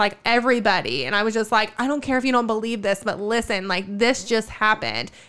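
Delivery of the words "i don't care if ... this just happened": ordinary delivery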